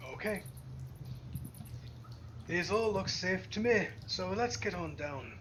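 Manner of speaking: put-on Australian accent tinged with Scottish. Leading the group down rough stairs carved into rock, in an australian scottish accent. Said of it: "I love the Australian Scottish accent".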